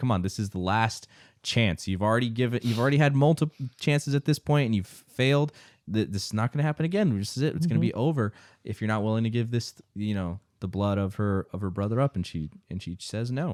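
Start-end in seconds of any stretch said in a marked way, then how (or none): none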